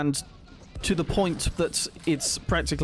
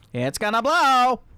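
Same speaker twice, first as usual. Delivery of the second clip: put-on old-timey 1950s newsreel announcer voice; 9 semitones higher, 7 dB louder than usual. Calling out in a game that something is about to explode: 1950s announcer voice.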